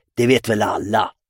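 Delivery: dismissive, scornful snort. Narrator reads Måns answering Pelle's question about the maypole: dismissive snort. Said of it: "fnös Måns".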